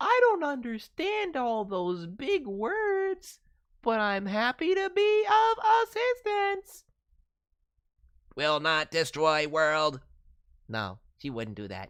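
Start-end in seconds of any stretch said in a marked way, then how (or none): 0.0-10.0 very high, loud, slow, drawn-out voice. Voicing Holly, a silly little robot who loves to help people: Derpy voice. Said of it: "like Derpy from My Little Pony".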